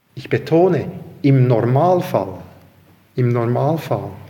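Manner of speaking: emphatic stress on im Normalfall.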